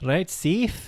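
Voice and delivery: high, fake, put-on South African accent. Repeating the sign-off after being told to use an accent: put-on South African accent. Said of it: "South African".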